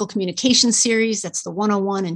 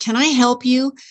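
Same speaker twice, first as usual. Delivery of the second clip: hostile, confrontational, slower; 3 semitones higher than usual. A speaker shows how one phrase can carry another message, saying it hostile. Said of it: "what's your problem?".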